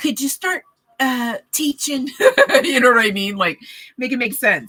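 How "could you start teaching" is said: high, otherworldly, divine-sounding voice. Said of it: "the divine isn't gonna be like".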